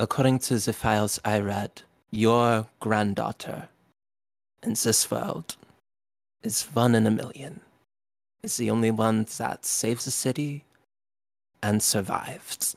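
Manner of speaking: grave, sober, somber, solemn delivery. Voicing a character who stands between two others: somber, quiet tone. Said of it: "in a very somber, quiet tone".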